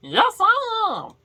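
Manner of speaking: put-on storybook goblin character voice. Telling a story, the Goblin King answers the question, goblin voice. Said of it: "I can only do one goblin voice".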